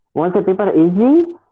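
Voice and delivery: pitch climbing on easy like a question. Showing that rising intonation marks a yes/no question: rising pitch on easy. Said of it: "this rising intonation actually indicates that that is a question".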